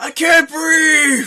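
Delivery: muffled, high, slow, stretched-out yell. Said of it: "Are you yelling into the fat folds?".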